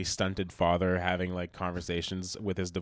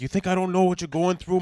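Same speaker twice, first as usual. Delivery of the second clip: put-on Italian dad voice, higher and louder; 12 semitones higher, 8 dB louder than usual. Playing a yelling italian dad scolding his kid: imitating an italian dad. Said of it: "just like good Italian dad".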